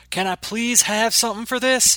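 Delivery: very loud, very high, booming bellow. Narrator voicing a man with a wounded arm crying out to the doctor, bellowing. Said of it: "he bellowed".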